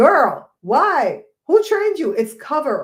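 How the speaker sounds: slow, drawn-out, swooping, in-your-face scolding. Speaker recalls correcting her little cousin's speech right in her face, retelling a scolding. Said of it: "I'm like right in her face going".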